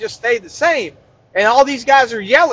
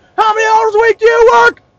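play-acted very high, loud, startling holler; 11 semitones higher, 5 dB louder than usual. Retelling a trainer waking a man on a bench: imitating someone yelling. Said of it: "yells at him, startles the guy awake".

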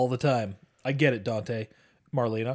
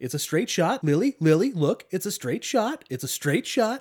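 put-on douchey voice, much higher; 6 semitones higher than usual. Mocking a character's line from the roof scene in a douchey voice. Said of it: "He kind of sounds like a douche".

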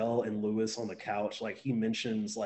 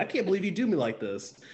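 pitched-up, menacing, threatening delivery; 7 semitones higher than usual. Quoting a movie line: Samuel L. Jackson impression. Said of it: "Sam Jackson's like".

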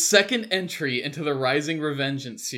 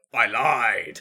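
put-on slightly annoyed villain voice, lower pitch; 4 semitones lower, 3 dB louder than usual. Describing a meme clip, speaker quotes the reply; imitating Darth Vader, mock-annoyed. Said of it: "He just sounds like a little annoyed".

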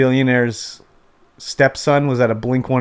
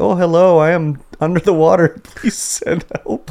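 put-on Indian accent with raised pitch; 5 semitones higher than usual. Retelling a funny clip of a guy to a friend, imitating an indian accent. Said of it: "he's got his like you know Indian accent".

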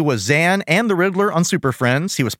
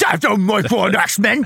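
put-on curmudgeonly approving voice, higher; 5 semitones higher than usual. Retelling how Wolverine approves of Kitty: curmudgeonly approving Wolverine voice. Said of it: "that curmudgeonly approving".

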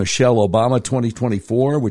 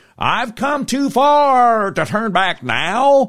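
patronizing fake Southern drawl, very high, slow, drawn out; 11 semitones higher than usual. Retelling a campaign speech in a Selma church: Hillary Clinton's fake Southern accent.

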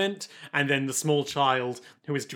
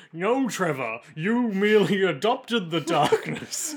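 slow, deliberate, each word dragged out; 4 semitones higher than usual. Imitating another speaker's impression of the Bishop: imitating Bishop impression like Bane. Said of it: "your impression of the Bishop is like".

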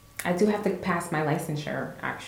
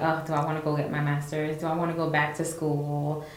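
normal talking voice

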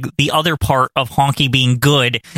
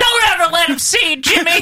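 very high, shrill, worked-up yell; 14 semitones higher than usual. Retelling how Honky Tonk yells, upset for Jimmy: imitating Honky Tonk yelling. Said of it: "And he just yells".

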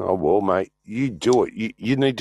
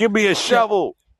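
shrill, very high-pitched yell; 12 semitones higher, 4 dB louder than usual. Answering a remark to [name] about digging a deep hole, yelling. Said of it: "Whoops, sorry, I yelled".

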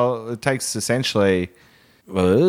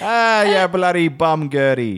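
botched, unconvincing Italian accent, pitched up; 6 semitones higher than usual. Joking about a robot, the speaker attempts an italian accent. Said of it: "Is that not Italian?".

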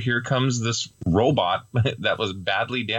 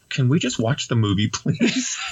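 normal talking voice

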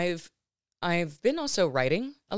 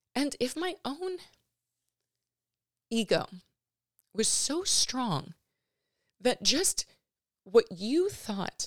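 slow, choked-up, emotional voice. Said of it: "I'm gonna get emotional, sorry".

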